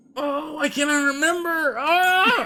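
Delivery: mock crying, fake sobbing. Joking about having amnesia, answering another speaker: mock crying. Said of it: "why are you crying even though you don't remember".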